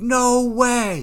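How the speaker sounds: yelling.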